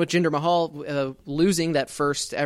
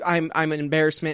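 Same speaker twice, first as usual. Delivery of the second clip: ordinary talk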